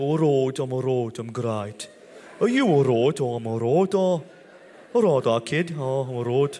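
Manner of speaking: put-on Birmingham Brummie accent. Imitating how a wife from Birmingham talks: imitating a Birmingham accent. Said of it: "She speaks like".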